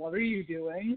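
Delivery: divine, heavenly voice of a deity. Recapping a show where a priest takes a falling picture as God: God voice. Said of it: "Nice God voice".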